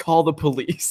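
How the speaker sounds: mock dead serious, grave, solemn delivery. Echoing back how the other speaker just delivered a line: mock-serious delivery. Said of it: "so serious".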